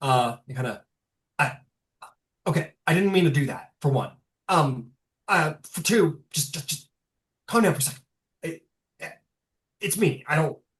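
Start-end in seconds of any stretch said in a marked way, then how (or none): 1.4-10.5 stammering character voice, raised, flustered, caught off guard. Voicing a character surprised that the player obeyed: surprised, flustered character voice. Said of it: "he kinda looks surprised that you did".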